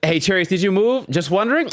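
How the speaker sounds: high-pitched, sarcastic, needling tone. Imitating viewers asking about the move: imitating a sarcastic chat question. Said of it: "There's a little bit of sarcasm".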